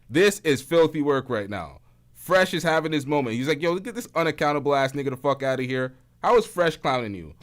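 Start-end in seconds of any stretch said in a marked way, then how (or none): none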